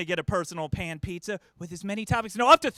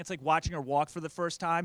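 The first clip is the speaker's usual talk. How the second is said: usual speaking voice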